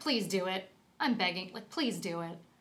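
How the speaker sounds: play-acted goading, pleading, begging tone. Imitating a character on screen baiting another: imitating someone baiting. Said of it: "She's baiting her".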